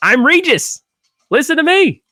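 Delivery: full-on, high, screamed shouting. Recalling how Regis used to scream his name: Regis screaming his name. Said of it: "Remember when Regis used to just scream his name?".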